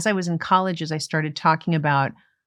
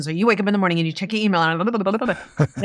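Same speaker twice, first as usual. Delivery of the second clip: very fast, rattled-off, hyper-speed delivery; 3 semitones higher than usual. Demonstrating a bit about a day in a busy office person's life, very fast. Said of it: "I would do it very fast".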